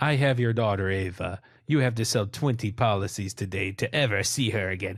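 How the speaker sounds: terrible, bad fake Russian accent. Acting out an imagined phone call from a Russian man to Zachary: terrible Russian accent. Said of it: "that's a terrible accent".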